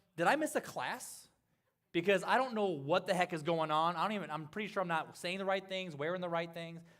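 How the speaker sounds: normal talking voice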